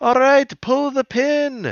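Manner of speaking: very high-pitched yelling. Retelling a cartoon scene, imitating a character yelling at Hack and Slash. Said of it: "yelling at Hack and Slash".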